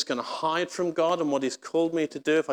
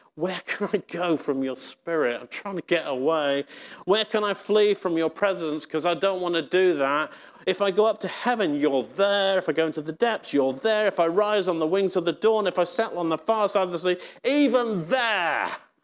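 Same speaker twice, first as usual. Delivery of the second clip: fed-up, exasperated delivery. Reading the psalm as the speaker imagines David saying it: David, mock-exasperated. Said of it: "read this psalm with an exasperated tone".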